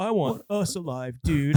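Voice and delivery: mock feeble, frightened, drawn-out voice. Retelling a movie scene, quoting Fester: imitating Fester weak and scared. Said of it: "he sounds, like, weak and scared".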